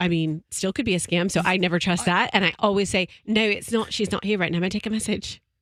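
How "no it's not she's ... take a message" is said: put-on British accent. Telling how she answers suspected scam calls, in a fake british accent. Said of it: "you put on your fake British accent".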